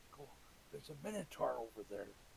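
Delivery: sneaky, quiet, hushed half-whisper. Playing a character sneaking up on an ally: half-whispering quietly. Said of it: "and quietly whisper".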